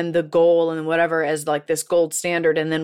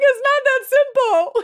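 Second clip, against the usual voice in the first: weepy drawn-out sobbing, very high and slow. Retelling a movie scene where she answers through tears: imitating Rachel McAdams crying. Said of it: "And she's crying".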